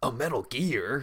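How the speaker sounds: surprised, announcing tone. Retelling how a game character announces a robot: imitating Snake's surprised announcement. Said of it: "all surprised".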